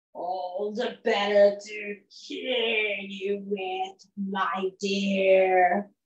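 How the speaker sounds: very low voice with "dear" stretched out. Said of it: "It was the big bad wolf. / Gives me more time to go and run to Grandma's house because I'm a wolf and I'm hungry and I like to eat little girls and grandmother. / And he said".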